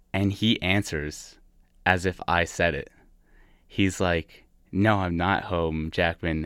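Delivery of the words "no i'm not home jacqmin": usual speaking voice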